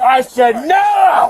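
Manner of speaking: put-on slow, loud, drunken bellowing shout.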